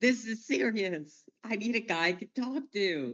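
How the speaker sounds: fed-up, frustrated voice pitched very high. Retelling how Fowler demanded someone to talk to: imitating Fowler frustrated. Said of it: "He's so frustrated".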